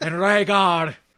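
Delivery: put-on Irish accent. Quoting Littlefinger's story to Sansa: Littlefinger's Irish accent. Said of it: "With his Irish accent".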